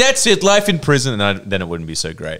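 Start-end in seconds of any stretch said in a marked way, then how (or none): 0.0-1.1 much higher, louder, stern authoritative delivery. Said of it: "And they'd be like".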